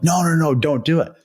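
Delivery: high-pitched shouted yell. Retelling what coaches on the bench yelled at a player: imitating coaches yelling. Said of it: "the coaches or some guys on the bench were yelling".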